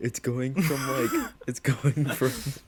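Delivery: talking through laughter. Starting to tell a story to friends, laughing while talking. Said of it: "I'm only laughing 'cause my story".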